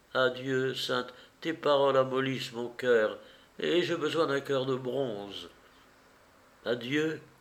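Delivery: ordinary delivery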